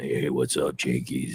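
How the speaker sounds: very low, deep bass voice, soft. Imitating a guy who has a really good voice, in a deep voice. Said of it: "like deep and like".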